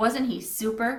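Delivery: ordinary delivery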